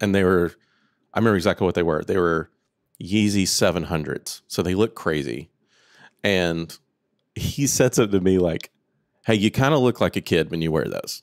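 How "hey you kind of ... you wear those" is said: mock affectionate, loving, friendly sing-song tone. Speaker retells a friend's comment about his Yeezy sneakers, mock-loving friendly tone. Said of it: "in a very loving".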